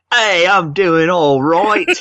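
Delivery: very high-pitched put-on British accent. A guest answers the host asking how he's doing, put-on accent. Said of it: "that's a good accent you got".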